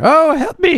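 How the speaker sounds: very high villager voice, nearly a whinny. Playing a villager who comes through the tavern door, in a villager's voice. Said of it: "I was trying to do a villager's voice".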